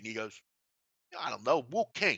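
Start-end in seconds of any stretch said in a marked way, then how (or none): 1.2-2.2 put-on Harlem accent. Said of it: "Harlem, like, you know, uh, uh, accent".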